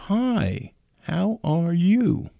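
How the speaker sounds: very slow, drawn-out, patronizing, condescending tone. Retelling strangers who spoke to a wheelchair user as if slow; mock-condescending greeting. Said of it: "talk to me like I was slow".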